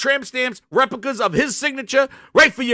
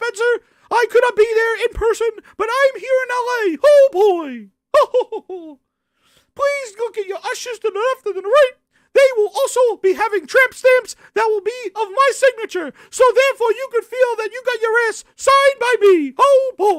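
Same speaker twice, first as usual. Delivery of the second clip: cartoon mouse voice, pitched way up; 10 semitones higher than usual. Speaker imitates someone addressing an audience, in a Mickey Mouse voice. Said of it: "he is friggin' Mickey Mouse".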